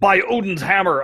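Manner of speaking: very high-pitched, squeaky superhero exclamation voice. Complaining about an annoying voice callout on a table: imitating Thor's voice line. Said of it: "whenever Thor does any of his".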